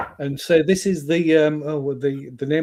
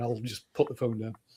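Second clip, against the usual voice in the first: normal talking voice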